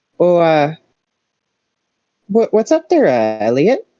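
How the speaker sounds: bad put-on Minnesota accent, sing-song. Voicing a woman at a book counter greeting Elliot, bad Minnesota accent. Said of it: "like bad Minnesota".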